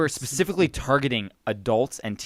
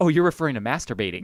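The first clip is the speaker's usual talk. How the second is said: plain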